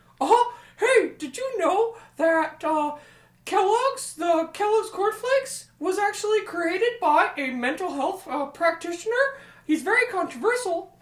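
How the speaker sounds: very high, loud, squeaky cartoon voice. Two people take turns doing Mickey Mouse, and one goes first: Mickey Mouse impression. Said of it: "So we both have to do Mickey Mouse".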